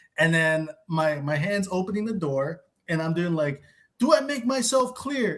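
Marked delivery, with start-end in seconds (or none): 4.0-5.4 very high, shrieked screaming. Telling how someone finally left, the speaker re-enacts a final line at the door: retelling own screaming. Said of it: "my final like screaming monologue thing".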